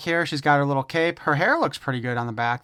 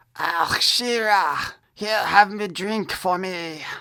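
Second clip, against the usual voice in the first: loose, rough, put-on French accent; 4 semitones higher than usual. Imagining Montana approaching Shira at the bar, kind of French accent for Montana. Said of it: "I just did kind of a French accent for Montana".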